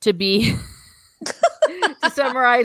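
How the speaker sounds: talking through laughter. Wrapping up a discussion of the chapters: laughing while talking. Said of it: "I'm laughing here".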